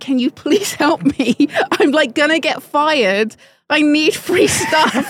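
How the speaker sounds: fake crying voice. Speaker retells pleading with their ex for help, sitting on the floor; imitating own past crying. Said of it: "sitting on the floor and crying and saying".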